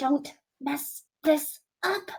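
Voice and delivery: in a whisper. Playing a character who pulls someone close by a rope: whispering. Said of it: "pulls him closer and whispers".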